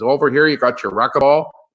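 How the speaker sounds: put-on Shamokin, Pennsylvania coal-mining region accent. Retelling a resort tour from a guy in the Poconos, in a Shamokin coal-mining accent. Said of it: "He's got this like Shamokin, Pennsylvania coal mining accent".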